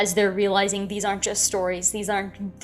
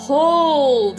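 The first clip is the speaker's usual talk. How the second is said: loud, carrying, drawn-out boom, not angry; 6 semitones higher, 8 dB louder than usual. Narrator voices the Reverend over a crowd pushing past the sheriff; loud, carrying boom. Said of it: "the Reverend's voice booms, not in an angry way, but just in a loud, carrying boom".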